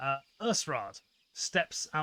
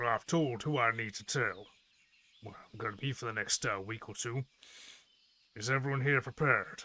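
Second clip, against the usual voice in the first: low, much deeper, dropped-down character voice; 3 semitones lower than usual. Speaker, voicing a character, addresses everyone; much deeper voice. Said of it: "It's a much deeper voice".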